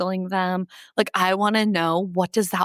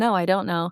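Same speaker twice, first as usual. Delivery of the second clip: acted curt, rude tone. Retelling a reply to someone's filler phrases: retelling being kind of a jerk. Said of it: "trying to be, like, kind of a jerk".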